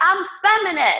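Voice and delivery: very high-pitched shouted scream. Speaker on a YouTube video shouts to the world: screaming. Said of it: "Sorry for screaming".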